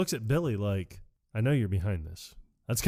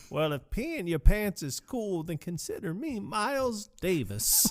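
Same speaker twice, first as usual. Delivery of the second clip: put-on drawn-out, high, slow little old lady voice; 9 semitones higher than usual. Retelling a movie scene, invited to deliver the line: imitating the old lady. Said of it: "I'll let you have this line".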